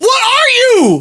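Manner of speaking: high-pitched screaming. Reacting to a hockey deal: screaming. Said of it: "I'm screaming".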